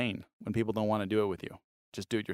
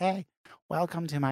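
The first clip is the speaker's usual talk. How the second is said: put-on mimicked young boy's prepubescent voice, higher pitched; 7 semitones higher than usual. Imitating a twelve-year-old starting an online tutorial: imitating a kid's prepubescent voice. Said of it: "prepubescent, um, vo-, vo-, vocals".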